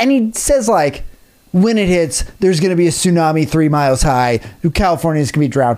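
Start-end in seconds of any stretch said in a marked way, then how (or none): none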